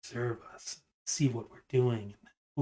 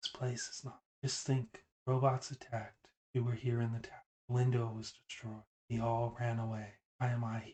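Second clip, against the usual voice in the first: whispering; 5 dB quieter than usual. A character leans in really close to the player and whispers. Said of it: "leans in really close and whispers".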